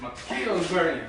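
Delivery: normal talking voice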